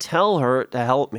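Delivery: ordinary delivery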